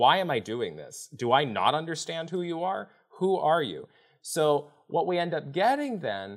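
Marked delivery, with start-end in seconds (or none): 0.0-3.9 put-on fed-up voice, higher. Retelling Moses arguing with God: imitating fed-up Moses. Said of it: "he's fed up".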